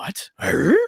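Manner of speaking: cartoon character voice on "what" and "huh". Retelling a reply to the wife wanting to watch football, Scooby-Doo voice. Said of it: "I did the Scooby-Doo voice".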